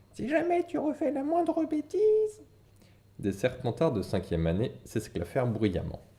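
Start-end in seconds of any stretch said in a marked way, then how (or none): 0.1-2.4 piercing, very high, nagging shrill shriek. Reading a story where one character taunts another by mimicking his mother, shrill screaming. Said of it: "Il prit une voix perçante et hurla".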